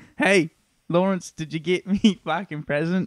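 put-on full Australian accent, all the way. Addressing lawrence in an australian accent. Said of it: "Sorry, that was Australian".

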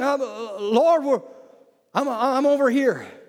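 mock quavering, trembling voice, very slow. Retelling the garden story, the speaker voices Adam answering God: Adam's trembling voice. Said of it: "I can just hear him trembling".

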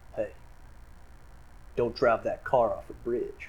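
deliberately bad, breathy whispered delivery. Recalling the Lincoln car commercials: awful Matthew McConaughey impression. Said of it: "That was an awful impression".

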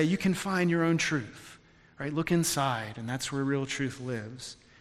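soft, gentle, half-whispered stage whisper. Mocking what podcasts say: imitating a half-whispery gentle voice. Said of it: "a whispery kind of gentle voice".

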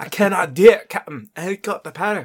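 very loud, belted, bad Scottish accent. On a podcast, a host answers a friend in an awful Scotty impersonation. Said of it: "In my awful Scotty impersonation".

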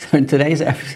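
words breaking up with laughter throughout. Opening today's episode, laughing while talking. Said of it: "I'm laughing".

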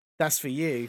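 spiteful, venomous delivery. Retelling a heckler's line, delivered staring straight at the comedian: imitating a venomous retort. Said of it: "she said it was such venom".

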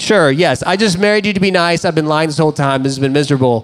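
dripping, snide, cutting, snarky sarcasm. Retelling a marriage argument with his wife: imitating own sarcastic remarks. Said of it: "very sarcastic, snarky comments".

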